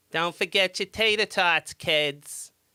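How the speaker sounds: put-on broad, thick Boston accent, loud and high. Talking about school lunch ladies, speaker imitates one in a dirty Boston accent. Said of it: "The dirtiest Boston accents".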